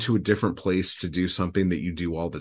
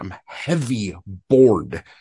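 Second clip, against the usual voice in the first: mock furious, loud, hard emphasis; 3 semitones higher, 6 dB louder than usual. Retelling how the poet read the line aloud: imitating Berryman's angry reading. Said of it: "he's so angry".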